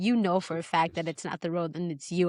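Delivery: muttered half-whisper under the breath. Retelling what mom said during the car ride: imitating mom half-whispering. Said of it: "whispering under her breath".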